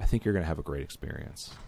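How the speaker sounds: smooth, seductive, suave tone. Wrapping up thoughts on Elder Scrolls, like a gigolo picking someone up. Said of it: "Sounded like you were a gigolo about to pick up somebody".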